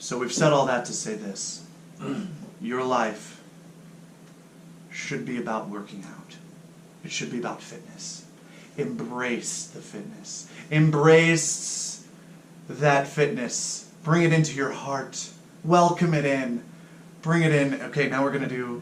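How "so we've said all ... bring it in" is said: put-on preaching voice like an old pastor. Starting to close your talk to the listeners, do it in an old Baptist pastor voice. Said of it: "let's do it like an old old Baptist pastor".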